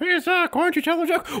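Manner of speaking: very high-pitched voice. Imitating the other speaker asking for a joke: Meg impression. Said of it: "such a good impression of me".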